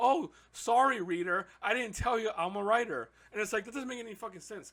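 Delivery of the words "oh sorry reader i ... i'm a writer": slow, mocking, play-acted sarcastic send-up voice. Retelling a book's narration in mock form: mocking imitation of the author. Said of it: "He's like".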